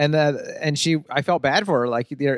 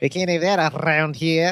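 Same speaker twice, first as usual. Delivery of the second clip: put-on South African accent with rolling Rs. Retelling a movie character's reaction while describing the plot: South African accent. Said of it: "That's how you do a South African accent".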